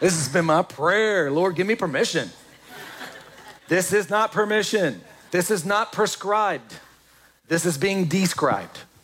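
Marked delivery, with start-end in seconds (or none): none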